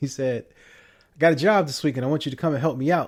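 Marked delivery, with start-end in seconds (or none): 1.1-3.1 put-on Southern accent, higher pitched. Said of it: "don't mind the Southern accent".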